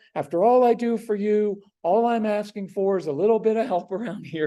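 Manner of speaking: high, imploring, pleading, guilt-laden martyr tone. Example of pleading with a strong-willed child: pleading tone. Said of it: "I don't go with a pleading tone".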